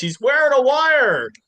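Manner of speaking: sudden shrill yell, very high and loud. Retelling a scene from Family Guy: imitating someone yelling. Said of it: "he just yells".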